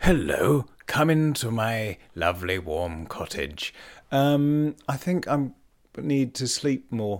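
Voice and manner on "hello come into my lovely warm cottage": put-on kindly, gentle old gentleman voice, much lower. Podcast host opening an episode slips into a voice: kindly old gentleman voice. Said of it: "like a kindly old gentleman in the snow".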